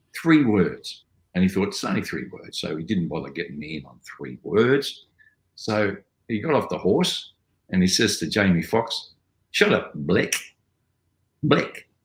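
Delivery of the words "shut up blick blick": put-on high-pitched, swooping South African accent. Retelling a line he said to another man after getting off a horse, south african accent. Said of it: "Blick is South African".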